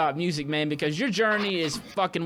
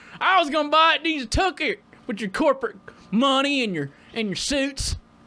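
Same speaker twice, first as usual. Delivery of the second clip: Southern accent, pitched higher; 8 semitones higher than usual. Joking with a friend about living in the South, doing a bit in a Southern accent. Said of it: "you do that accent".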